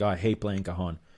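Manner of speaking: usual speaking voice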